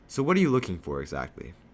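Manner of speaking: ordinary delivery, nothing marked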